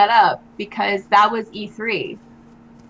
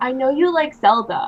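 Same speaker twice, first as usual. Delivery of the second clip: ordinary talk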